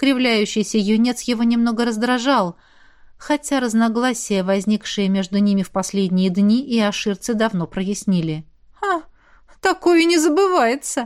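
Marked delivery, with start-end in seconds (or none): 8.8-11.1 high little giggling, tittering voice. Yoshi speaks to the security officer, giggling. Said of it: "хихикнул Иоши".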